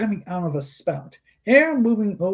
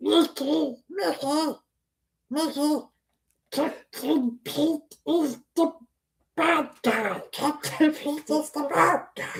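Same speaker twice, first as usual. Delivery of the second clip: high, slow quacking voice; 8 semitones higher, 4 dB quieter than usual. Told the voice isn't right, the speaker tries again: Donald Duck impression attempt. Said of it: "I know I'm getting closer".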